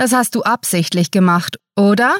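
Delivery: ordinary delivery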